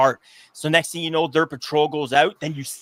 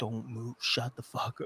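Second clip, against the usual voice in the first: barely audible, very hushed whisper; 4 semitones lower, 16 dB quieter than usual. Retelling what his companion nearby said while they hid and listened, retelling a whisper. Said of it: "he's just like whispering".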